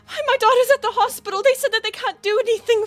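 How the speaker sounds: hysterical trembling voice. In a role-play, a character begs for help for an ill daughter: hysterical, shaking voice. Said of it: "She's in hysterics".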